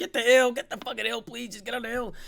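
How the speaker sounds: mock pleading yell, pitched way up. Reviewing match footage, reenacting own screaming at the team. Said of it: "I'm screaming right now".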